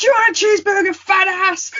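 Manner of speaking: wrestler voice, pitched very high. Retelling a wrestler's line from a match in a Scott Steiner voice. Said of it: "try and do a Scott Steiner voice".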